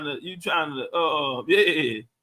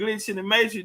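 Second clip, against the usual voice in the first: ordinary delivery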